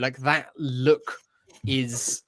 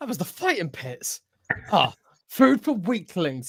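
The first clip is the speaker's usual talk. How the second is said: grumbling, dismissive running commentary, high and swooping; 6 semitones higher than usual. Recounting SM-33 critiquing everything the tour guide says, grumbling SM-33 voice.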